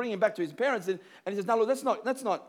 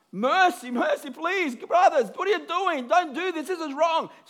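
put-on high, desperate, pleading outcry; 7 semitones higher, 3 dB louder than usual. Retelling how he cried out to his brothers: acting out crying out for mercy. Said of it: "So he's crying out".

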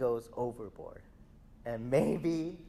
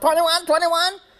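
put-on kid yell, much higher, louder; 15 dB louder than usual. Describing a kid's bad jokes at Ultimate games, retelling his yell. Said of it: "he's yelling this at the top of his lungs".

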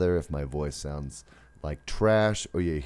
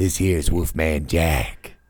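loud, ultra-deep, silky smooth voice; 2 semitones lower, 6 dB louder than usual. Greeting listeners after mention of a deep voice: Wolfman Jack voice. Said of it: "Getting some, uh, Wolfman Jack".

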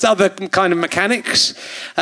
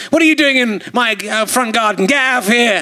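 put-on belligerent, aggressive, scolding old man voice; 4 semitones higher than usual. Questioning a man about his job, gone a bit aggressive. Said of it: "I've gone a bit aggressive with like an old".

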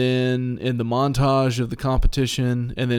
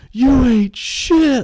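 very high-pitched, loud holler; 13 semitones higher, 8 dB louder than usual. Retelling an arm wrestling match where one guy yells: imitating someone yelling. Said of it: "he just yells out".

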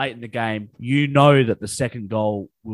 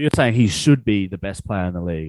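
ordinary talk, nothing marked

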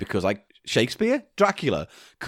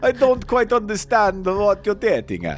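put-on Italian accent; 8 semitones higher than usual. In a scene, answering the other character's question as Mina Harker, Italian accent. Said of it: "in that Italian accent of yours".

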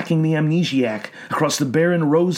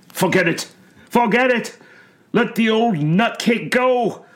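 full-throated, loud yell, pitched high; 6 semitones higher than usual. An orderly from Eldritch Asylum calls out to the others in a storm; yelled. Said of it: "yelled the orderly from Eldritch Asylum".

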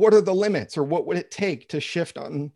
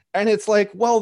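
ordinary delivery

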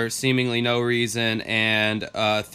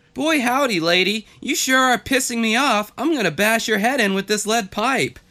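put-on very high-pitched voice like a young sitcom boy; 11 semitones higher, 4 dB louder than usual. Imagining Beaver from an old show grown up as a killer: Beaver from Leave It to Beaver voice. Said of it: "Can you imagine if Beaver grew up".

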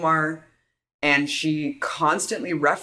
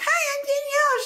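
put-on unhinged voice, pitched higher. Retelling a weird plug at a rally: imitating Danielle Stella sounding nuts. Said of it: "She sounded completely fucking nuts".

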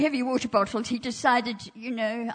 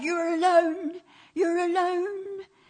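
very loud, insistent, pitched-up delivery; 8 semitones higher than usual. Speaker acts out what the devil tells them on the phone, very loud. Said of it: "he says to me very loudly".

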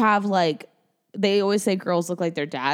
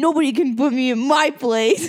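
mocking, high, slow voice of a fifteen-year-old boy; 6 semitones higher, 4 dB louder than usual. Mocking the other speaker's line as a fifteen-year-old boy: mocking fifteen-year-old boy voice. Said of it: "That's such a fifteen-year-old boy".

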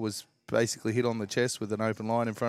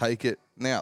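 put-on urgent, screaming voice. Retelling what was shouted at a televised game: imitating screaming at the TV. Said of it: "I was screaming at the T V".

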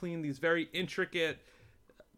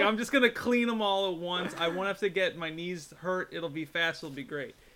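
ordinary talk, nothing marked

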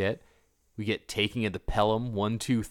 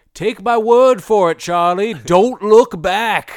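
put-on broad New England accent, thick, loud and pitched high; 10 semitones higher, 13 dB louder than usual. Quoting a guy from a Jaws scene, thick nor'easter accent. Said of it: "in this thick nor'easter accent's like".

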